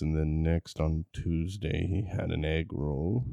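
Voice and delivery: slow, measured mock public radio narrator voice. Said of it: "I gotta work on my, uh, N P R voice".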